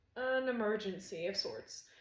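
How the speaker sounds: usual speaking voice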